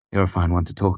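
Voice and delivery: ordinary talk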